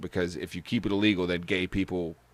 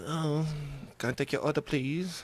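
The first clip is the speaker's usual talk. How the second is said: put-on, high-pitched Japanese accent; 8 semitones higher, 4 dB quieter than usual. Chatting about takeout food, the speaker does a mock japanese accent. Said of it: "I give my dog that accent".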